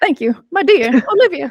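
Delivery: put-on high old-Hollywood mid-Atlantic accent. Answering praise for her accent, the speaker says thanks in a transatlantic accent. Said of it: "You did it pretty well".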